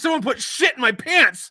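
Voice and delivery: high, loud panicked scream.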